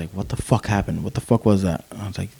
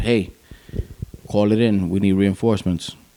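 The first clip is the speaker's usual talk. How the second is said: usual speaking voice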